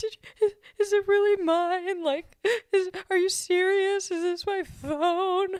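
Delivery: acted-out crying. Retelling getting an iPhone that year, acting out past self crying. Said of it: "and I was crying. I got super emotional".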